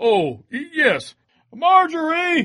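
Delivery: calling out loudly. Told to wake a sleeping woman, he calls up to her, yelling upstairs. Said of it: "What's all the racket?".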